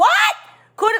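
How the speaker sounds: very high-pitched, rising, swooping shout. Pleading with a listener to understand, the speaker is yelling. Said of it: "I'm yelling. I know I'm yelling".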